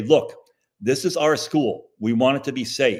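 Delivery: ordinary talk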